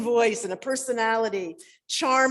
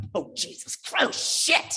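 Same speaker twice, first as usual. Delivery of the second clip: mock angry cursing, slow; 5 semitones higher than usual. Retelling a parent cursing behind the wheel: imitating dad cursing angrily. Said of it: "he'd get behind that wheel and it would start".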